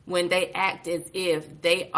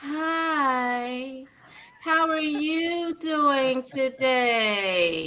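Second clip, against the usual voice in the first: mocking singsong tone, higher; 8 semitones higher than usual. Retelling how people talk down to the speaker: imitating a sing-song voice. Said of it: "they sing to you when they're saying it".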